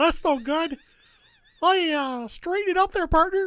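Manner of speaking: loud, high-pitched squeaky delivery. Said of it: "It's supposed to be Mickey Mouse".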